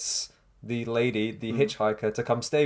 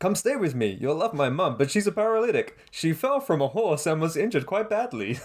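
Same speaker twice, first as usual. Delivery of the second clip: matter-of-fact, straight-faced, pitched up; 5 semitones higher than usual. Quoting a film line with a straight face: imitating a matter-of-fact delivery. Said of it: "let me see if I can do it with a straight face".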